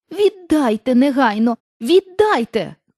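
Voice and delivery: put-on girl's voice, indignant, outraged cry. Reading Dorothy's line to the witch who has her shoe: indignant shout. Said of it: "крикнула вона".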